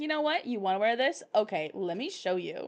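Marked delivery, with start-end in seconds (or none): none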